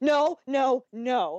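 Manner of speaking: slowed-down scream. Retelling watching the show's kiss on the couch, retelling screaming. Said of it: "I am literally on our couch screaming".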